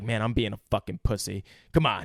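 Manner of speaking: put-on muttering, pitched low. Retelling a movie scene, acting out the character talking to himself: imitating Mel Gibson. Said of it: "And he's like".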